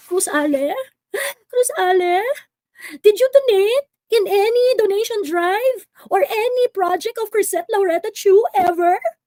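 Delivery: high, mock-tearful, pleading sing-song.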